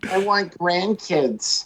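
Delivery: put-on elderly grandmother voice.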